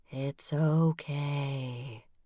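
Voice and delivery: soft, eerie, spooky ghost voice, "okay" drawn out. The narrator answers him in a spooky voice. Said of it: "I said in my spooky voice".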